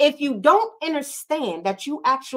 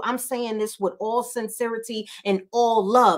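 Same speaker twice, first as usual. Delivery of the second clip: plain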